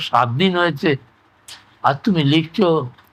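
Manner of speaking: normal talking voice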